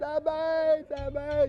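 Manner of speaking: imitated shouting. Retelling how a friend in the woods at night yelled: imitating someone shouting. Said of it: "puis il criait".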